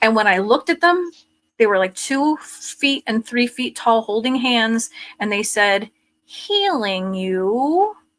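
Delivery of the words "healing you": synthesized machine voice with "you" drawn out. Retelling what two small figures said: imitating a synthesized voice. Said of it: "with, like, the synthesized voice".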